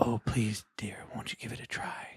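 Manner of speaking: oily, wheedling, creepy slimy whisper. Retelling a voice heard when a recording was played back, creepy slimy used-car-salesman voice. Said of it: "creepy, slimy used car salesman voice going".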